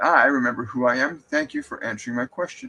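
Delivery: normal talking voice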